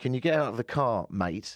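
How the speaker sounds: put-on parody Australian accent, laid on thick. Retelling what a man said while holding the speaker's passport, in a mock Australian accent. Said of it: "in a mock Australian accent".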